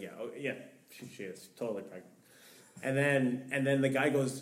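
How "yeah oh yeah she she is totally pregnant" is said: half-whispered, breathy, humoring go-along tone. Retelling the speaker's dad going along with a stranger: imitating a humoring reply. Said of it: "humoring him".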